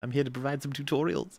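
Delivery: dainty, high put-on fairy voice. Joining a bit about a character with a fairy voice: put-on fairy voice. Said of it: "like a fairy voice".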